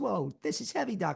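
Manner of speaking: rough, creaky screen-hero voice, crackling a bit. Showing the others voices, doing Michael J. Fox: Michael J. Fox voice. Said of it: "if Michael J. Fox isn't able to do his voice".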